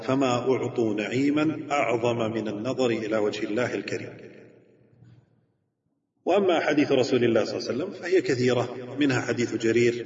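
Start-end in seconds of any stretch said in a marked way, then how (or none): none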